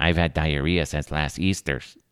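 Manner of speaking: put-on priest-style accent. Retelling how a son quotes the priest from Nacho Libre with an accent. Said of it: "he says Easters 'cause he has a, uh, an accent".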